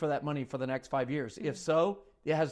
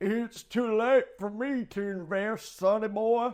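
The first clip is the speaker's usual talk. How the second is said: put-on very slow, creaky old man voice; 6 semitones higher than usual. Taking a turn at funny voices, doing a put-on old man voice. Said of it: "Here's the old man voice".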